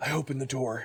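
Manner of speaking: put-on laid-back, relaxed voice. Trying an impression while reading a line: Keanu Reeves voice. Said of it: "I do my best Keanu Reeves".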